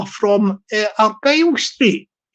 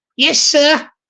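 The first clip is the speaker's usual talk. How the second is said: slightly higher-pitched voice, nudged up a touch; 4 semitones higher than usual. Speaker shows a voice done without a voice changer: pitched a little higher. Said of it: "just pitching it a little bit higher".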